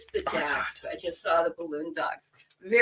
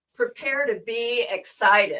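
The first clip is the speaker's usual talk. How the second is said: heavily sarcastic, thick, drawn-out delivery; 5 semitones higher, 4 dB louder than usual. Announcing that the next fabric is about to be shown: thick sarcasm. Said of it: "The sarcasm is so thick".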